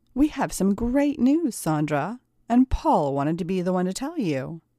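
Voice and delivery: plain reading voice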